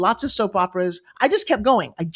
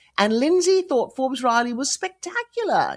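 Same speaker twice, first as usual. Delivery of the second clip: put-on British accent throughout; 3 semitones higher, 3 dB quieter than usual. Telling about hiring a British woman named Lindsay Maxwell; British accent. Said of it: "That's a good British accent".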